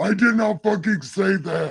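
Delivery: divine voice, high. Introducing a book called God Said, the speaker says a line in God voice. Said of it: "right now with God voice".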